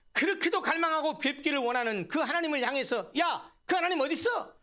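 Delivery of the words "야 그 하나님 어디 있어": high mocking taunt. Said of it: "원수들이 조롱에 대해서".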